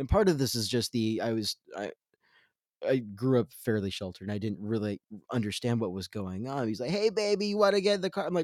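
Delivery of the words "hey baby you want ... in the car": play-acted shrill yell, pitched very high. Retelling how the driver yelled out the window at a lady: imitating someone yelling. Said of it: "he just started yelling out the window at this lady".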